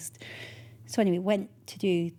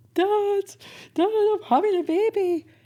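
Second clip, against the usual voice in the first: put-on, very high, slow, tearful, floods of tears; 13 semitones higher, 7 dB louder than usual. Retelling a phone call to her dad, imitating herself crying. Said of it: "Bursting out crying and just saying to my dad".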